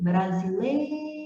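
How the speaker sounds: lei in brasileiro long, heavy, stretched and stressed. Teaching paroxytone words, stretched, stressed lei in brasileiro. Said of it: "nós vamos demorar mais na pronúncia do lei ... demorei mais na penúltima".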